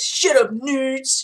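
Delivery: angry dude-bro voice. Voice actor demonstrating a character's voice, Wolf Pack angry bro voice. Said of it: "the wolf pack is an angry bro voice".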